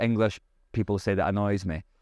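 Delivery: plain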